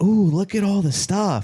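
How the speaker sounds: high, over-excited, way too thrilled gushing. Retelling a man entering a pastry shop with his kid: imitating someone way too excited. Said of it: "he was way too excited to be in a pastry shop".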